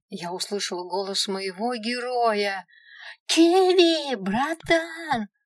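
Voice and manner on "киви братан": shrill, loud full-throated squeal, Киви stretched out. First-person narrator hears her hero's voice and calls out: screaming at top of lungs. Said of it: "Завопила во все горло".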